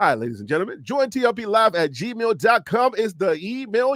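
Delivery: put-on radio host announcer voice. A show host addresses his audience: radio announcer voice. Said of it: "Let me put in my radio voice".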